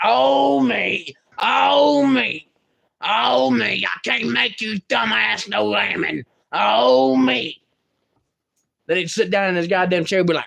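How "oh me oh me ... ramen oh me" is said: very slow, drawn-out, creaky, rough-voiced complaining. Retelling what grandfather would say: imitating grandfather. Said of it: "My grandfather would be like".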